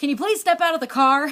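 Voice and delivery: loud, fast, gruff delivery. Recounting being stopped in the car, quoting the police officer: retelling a gruff voice. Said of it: "this really gruff voice say".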